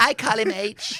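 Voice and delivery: very high, loud, adoring doting voice. Doing an impression of Harry's wife, speaking of Harry: impression of Harry's wife. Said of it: "That's a very good impression".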